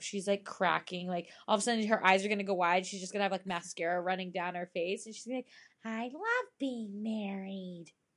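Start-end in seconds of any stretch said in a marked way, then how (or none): 5.8-7.9 very slow, eerie little-doll voice. Quoting a married woman, the speaker mimics a creepy little doll voice. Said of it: "Like a creepy little doll".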